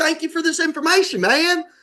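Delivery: put-on very high, friendly, nice-sounding Tennessee accent. Retelling a general manager thanking him for information, in a nice Tennessee accent. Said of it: "You know how Tennessee people sound".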